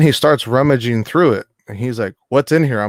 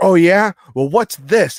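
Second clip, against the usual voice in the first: put-on confrontational raised voice, rising in pitch; 7 semitones higher than usual. Retelling a security guard's reaction: imitating someone raising his voice. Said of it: "he started to raise his voice at me".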